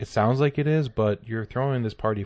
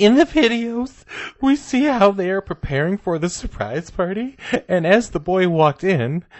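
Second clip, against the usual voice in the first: mock very high, raised, furious enraged woman's voice; 9 semitones higher, 6 dB louder than usual. Reading a complaining mother's statement aloud, as a mock-enraged mother. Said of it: "I'm going to read this like an enraged".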